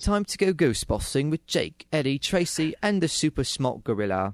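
sophisticated British accent. Reading a line aloud after being told they can't do an accent: british accent. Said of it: "I'm better at British accents".

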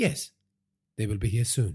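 ordinary delivery

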